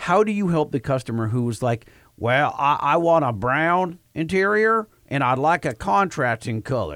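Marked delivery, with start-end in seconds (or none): 2.2-7.0 put-on Missouri accent. Imitating a customer describing what they want: put-on Missouri accent. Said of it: "That's his accent".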